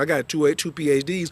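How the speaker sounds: plain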